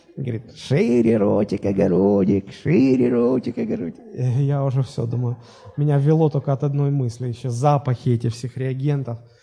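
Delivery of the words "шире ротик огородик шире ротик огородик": put-on low, rough, creaking elderly old-woman voice. Retelling what the woman at the dentist's drill said, in a put-on old-sounding voice. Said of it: "И так старческий такой голос".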